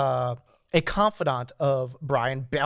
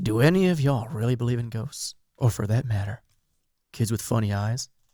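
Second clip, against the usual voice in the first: creepy, eerie, spooky voice, lower; 4 semitones lower than usual. Putting a question to the others in the room, creepy voice. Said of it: "Ooh, that was creepy".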